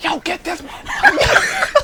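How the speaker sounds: put-on wild yell, pitched very high and stretched. Retelling chasing a car at high speed: retelling own yelling. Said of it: "I'm yelling out the window".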